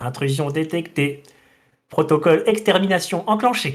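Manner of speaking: machine-like, robotic automated announcement voice. Describing what you hear on opening the door: robotic voice. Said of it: "une voix robotique qui te dit".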